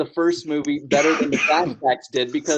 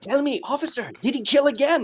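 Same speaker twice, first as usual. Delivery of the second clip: voice pitched way up, acted in character; 10 semitones higher than usual. Retelling a scene from the film: Doctor Loomis voice. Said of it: "better at doing an impression of him voice-wise".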